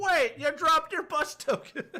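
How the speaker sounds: very high, calling-out yell. Voicing a man running after a player character: man shouting. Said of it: "you hear a man shouting".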